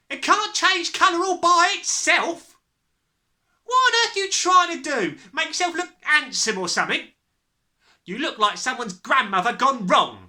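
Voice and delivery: very high, shrill, loud shrieking. Reading a story aloud, the mother turns on the father: shrieking. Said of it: "[name]'s hair was dyed a brilliant platinum blonde, / the mother was shrieking, / the mother was shrieking, / shrieked the mother".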